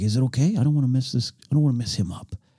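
quiet, humble put-on wrestler voice. Retelling what a wrestler asked backstage: bad Roddy Piper impression, very quiet, humble. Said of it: "I'm doing a bad impersonation".

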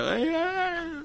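high, squeaky, soft voice.

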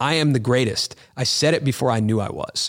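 normal talking voice

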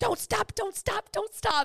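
play-acted screaming, very high-pitched. Retelling slowing the car as she ran up, imitating Bailey screaming. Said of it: "Bailey was screaming at me".

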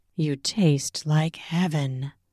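low, soft, close murmur. Reading a first-person story, the narrator says this to her, murmured. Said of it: "I murmured against her flesh".

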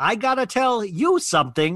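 deliberate, distinctive high, slow, drawn-out drawl. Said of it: "the way she speaks".

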